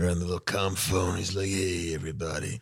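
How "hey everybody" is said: put-on tough-guy voice, quieter. Retelling a scene where Adama picks up the comm phone, in an Adama voice. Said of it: "I don't know why suddenly that became my Adama voice".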